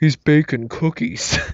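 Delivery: deep, throaty would-be whisper that carries. Retelling a moviegoer trying to whisper to his friend, imitating a deep, throaty voice. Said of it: "he had a really deep, uh, throaty kind of a voice".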